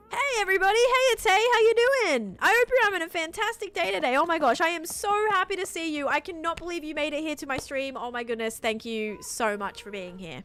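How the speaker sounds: fake over-enthusiastic tone. Streamer switching to an exaggerated greeting for viewers, fake over-enthusiastic greeting. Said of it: "Let me just change".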